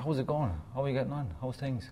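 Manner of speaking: strong Irish accent. Asked what a really strong Irish accent sounds like, showing a strong Irish accent. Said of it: "what does a really strong Irish accent sound like".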